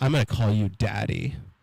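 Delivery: fully voiced stage whisper. Retelling what a date said into his ear: imitating someone half-whispering. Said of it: "she whispers in my ear".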